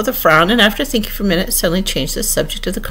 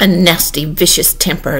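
usual speaking voice

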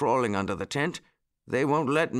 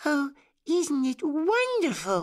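very high, swooping, drawn-out exclamation; 14 semitones higher than usual. A narrator reads Baby Bunty's line, holding Uncle Wiggily's paw, crying out. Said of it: "Cried Baby Bunty".

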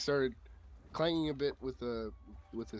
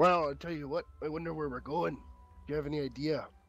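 put-on Scottish-accented dwarf voice, higher pitch; 4 semitones higher, 3 dB louder than usual. A player in a role-playing game asks another dwarf where they're going, put-on Scottish accent. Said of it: "we got really drunk and now we cannot remember how we got here. ... because I can't come up with a second Scottish accent".

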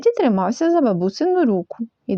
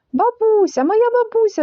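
very high, delighted, joyful cry; 11 semitones higher, 3 dB louder than usual. Reading a story, a child sees his grandmother at the door, exclaiming. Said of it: "вигукнув Тедді".

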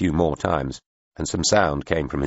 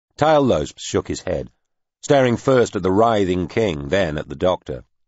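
ordinary delivery, nothing marked

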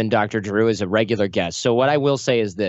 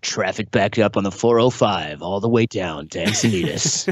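put-on announcer voice, lower, slower; 3 semitones lower than usual. Showing the voice they wish they always had, doing a K-Rock voiceover voice. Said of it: "I would be a voiceover guy".

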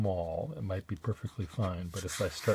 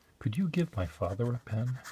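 mock child whisper, higher; 4 semitones higher than usual. Joking about a child's reply: imitating a child whispering. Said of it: "The child then whispers to me".

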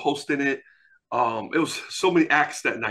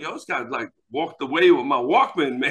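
usual speaking voice

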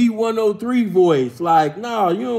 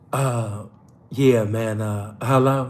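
fake seductive voice, very low and slow; 10 semitones lower than usual. Retelling how he called back in his sexy voice: put-on sexy voice. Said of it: "He called back in his sexy voice like".

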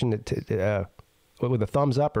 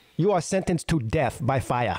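put-on Chinese accent. Acting out an arrest scene, the speaker delivers the sentence in a Chinese accent. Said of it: "Is that a good Chinese accent?".

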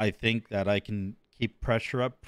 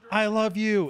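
play-acted shrill, very high screaming shriek; 10 semitones higher than usual. Retelling a movie scene where a citizen screams: imitating someone screaming. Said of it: "someone screams at him and says".

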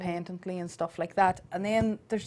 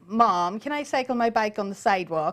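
child's put-on American accent. A mother imitates how her son talks: Lachlan's American accent. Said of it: "Lachlan's is an American accent as well".

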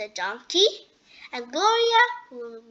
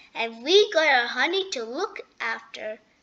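ordinary delivery

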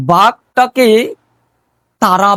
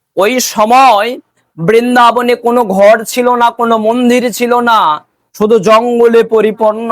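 emphatic repeat of the line, a little raised. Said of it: "ভালো করে শ্রবণ করবেন".

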